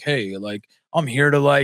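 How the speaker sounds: low, flat, dead-level droning monotone. Recounting the part where the FBI guy is introduced, imitating the monotone FBI guy. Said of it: "that guy is so monotone".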